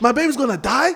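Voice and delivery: play-acted panicked, freaked-out, disbelieving alarm. Retelling own reaction on hearing the baby could die: reenacted panic. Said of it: "I'm freaking out".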